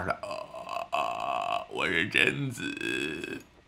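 very low, slow, dragged-out creaky ghost fry. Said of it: "气泡音".

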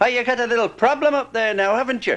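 put-on Irish brogue. Retelling a trolley mishap, quoting the inspector, imitating an irish brogue. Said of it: "in his Irish brogan saying".

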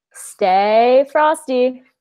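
"stay" with long, drawn-out, stretched a vowel. Asked to sign off the podcast, drawn-out a on 'stay'. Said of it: "emphasis and like drawn out A on stay".

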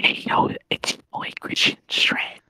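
put-on whisper. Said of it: "You're gonna be whispering".

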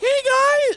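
very high, loud, squeaky voice. Imitating how he used to greet everyone back then, in a squeaky voice. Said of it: "he had a squeaker voice".

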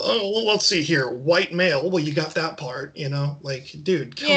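ordinary talk

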